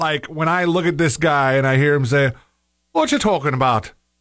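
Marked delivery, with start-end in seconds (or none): 2.9-3.9 put-on Irish accent, done for effect. Quoting a man they watched who sounds Irish, in a put-on Irish accent. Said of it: "Now I'm doing Irish".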